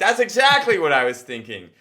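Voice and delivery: high, loud, relieved voice.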